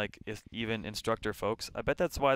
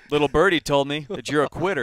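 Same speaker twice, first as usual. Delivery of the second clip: very loud, booming, mocking, taunting drill-instructor voice; 4 semitones higher, 10 dB louder than usual. Imagining heckling a trainee as an outside consultant: mock taunting a recruit. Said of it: "Be like".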